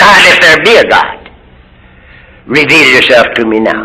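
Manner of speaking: plain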